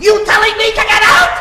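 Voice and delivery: loud high shout. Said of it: "the mother shouts back".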